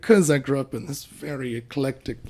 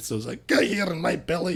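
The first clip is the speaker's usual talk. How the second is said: put-on Scottish accent; 4 semitones higher than usual. Demonstrating Scottish accents on request: Fat Bastard voice. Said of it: "regular Scottish would be like".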